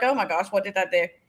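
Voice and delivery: acted terrified, fearful voice. Retelling being stopped at a restaurant door: retelling own terrified reaction. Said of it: "terrified of the man".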